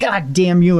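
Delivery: angry high-pitched burst. Retelling being slammed against a wall by Chris: imitating Chris angrily. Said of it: "he's just pissed off".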